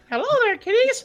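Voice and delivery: bad put-on cartoon mouse voice. Taking turns doing impressions with friends, speaker does a Mickey Mouse voice. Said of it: "My Mickey Mouse".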